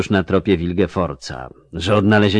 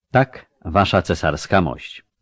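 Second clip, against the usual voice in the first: ordinary delivery, nothing marked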